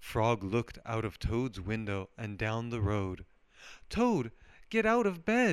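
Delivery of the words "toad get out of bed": very high, pleading, begging voice. Frog pleads with Toad, who is tired of waiting for the mail. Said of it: "he pleaded".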